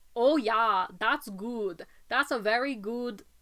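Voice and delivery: put-on slight, vague German accent. Describing the Smosh bumper, quoting what Ian would say: Ian's vaguely German accent. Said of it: "Ian would say in a vaguely German accent".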